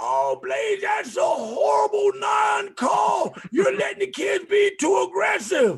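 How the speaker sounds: acted-out, very high, shrill shouting coach complaint. Retelling how coaches on the sideline complained to the referee: imitating coaches yelling. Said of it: "they're yelling at me".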